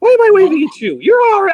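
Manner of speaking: high, loud, embarrassed, excited, surprised outburst.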